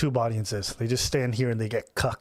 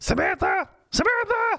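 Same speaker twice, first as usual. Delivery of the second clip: put-on piercing, shrill girl voice, much higher pitched; 4 dB louder than usual. Mocking a girl at a club calling Samantha, imitating a piercing girl's voice. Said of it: "Some people got disgusting voices".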